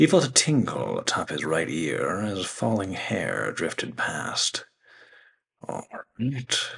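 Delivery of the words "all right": mumbled mutter under the breath, a touch high. A father answers his daughter as she cuts his hair, muttered. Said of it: "he muttered".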